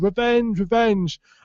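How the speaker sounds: mock high shout, repeated twice. Telling a story, the speaker acts out the friends' cry: imitating friends shouting. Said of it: "his friends just shouting".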